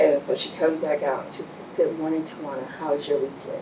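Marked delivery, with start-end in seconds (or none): 1.8-3.6 soft, quiet voice. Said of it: "With the soft voice".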